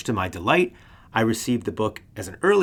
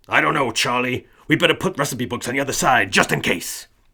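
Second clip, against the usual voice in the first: pushy, overbearing 1960s executive character voice; 2 semitones higher, 4 dB louder than usual. Picturing an executive in an office mulling sales: 1960s overbearing boss voice. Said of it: "That's my nineteen sixties overbearing boss type character voice".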